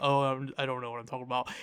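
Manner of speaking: soft, mumbled ramble, half under the breath. Retelling how own voice sometimes sounds on the podcast: imitating own mumbling. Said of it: "sometimes I start, like, mumbling".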